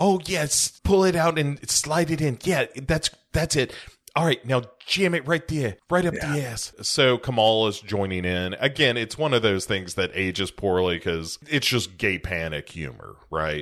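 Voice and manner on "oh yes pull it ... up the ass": high, campy voice, pitched high, camped up.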